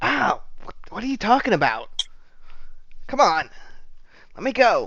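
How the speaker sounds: very high-pitched, protesting tone. Voicing a captive woman who pulls away after being slapped: voicing the captive woman. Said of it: "pulls away and she's like".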